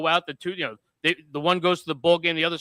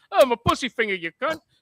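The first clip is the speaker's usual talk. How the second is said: casual, pitched-up, put-on British accent; 7 semitones higher, 3 dB louder than usual. Suggesting a comedy impression bit: John Travolta as a British guy. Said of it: "John Travolta as a British guy".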